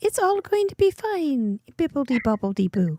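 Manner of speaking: put-on soothing good-witch voice, soft and floating. Imitating a friend as Glinda the Good Witch: imitating Glinda the Good Witch. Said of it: "Glenda the Good Witch".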